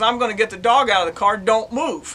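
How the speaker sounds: plain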